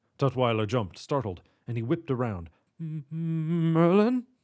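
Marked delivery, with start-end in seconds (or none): 2.8-4.2 meek, timid, high, drawn-out voice. Narrating a story, a startled man whips around to face the newcomer who greeted him: meek. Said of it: "He said meekly".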